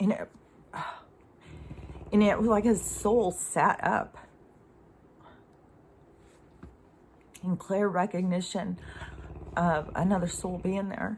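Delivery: fighting back tears. Telling a personal story of holding someone's hand, holding back tears. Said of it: "I'm trying to say it without crying".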